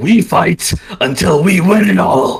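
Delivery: monstrous demon voice. Voicing a new voice coming out of a fighter: very demonic voice. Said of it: "a very demonic voice".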